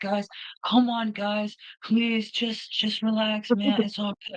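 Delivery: very high, easygoing, laid-back, soothing hippie voice. Imitating a hippie with dreadlocks who always said relax: laid-back hippie voice. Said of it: "he would talk like this".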